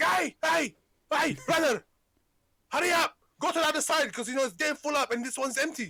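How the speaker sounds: high, loud, hollering shout. Retelling how a new guy at work shouted at another worker, imitating a man shouting. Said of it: "what are you shouting for?".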